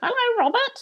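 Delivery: tiny, very high little parrot voice. Retelling the voice calling back from up in the trees, little parrot voice. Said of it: "a little voice from way up in the trees going".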